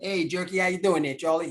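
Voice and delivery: heavily laid-on, put-on Italian New York accent. Do that thing he used to do, in a kind of Italian, New York-ish accent. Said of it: "kind of Italianish, but like New Yorkish".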